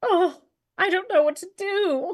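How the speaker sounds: crying, very high sobbing voice. Narrating a crumpled figure found at the end of a jam trail, crying. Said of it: "a crumpled over form just like crying".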